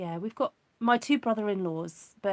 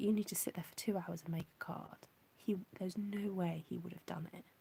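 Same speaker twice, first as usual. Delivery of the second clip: quiet half-whispering; 10 dB quieter than usual. Talking about the youngest son, who is in bed, half-whispering. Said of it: "I don't know why I'm whispering".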